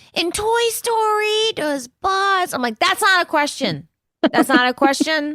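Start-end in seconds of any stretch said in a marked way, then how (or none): 0.1-2.5 cute, high, husky little voice, very slow. Quoting a boy asking a question, in his little husky, cute voice. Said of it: "he has this little husky, little like cute voice".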